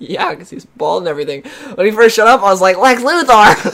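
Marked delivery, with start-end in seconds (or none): 2.8-3.7 high, cartoonish, duck-like voice. Speaker retells exclaiming when a character first showed up, sounding like Daffy Duck. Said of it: "The way you said it reminded me of Daffy Duck".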